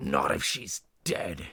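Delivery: low, growled delivery. Reading a story aloud, a captor answers his companion: growling. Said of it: "he growled back".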